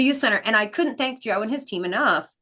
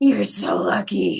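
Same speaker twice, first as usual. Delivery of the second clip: cryptic, low, rough cartoon-villain voice; 4 semitones lower than usual. Retelling a stranger who grabbed the speaker's arm, cryptic Disney villain voice. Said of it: "almost like a Disney villain voice".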